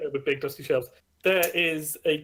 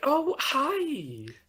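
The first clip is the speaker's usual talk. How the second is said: cheerful librarian voice, higher; 12 semitones higher than usual. Voicing a librarian greeting a visitor: happy librarian character. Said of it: "a cute as a button librarian, and she looks very happy".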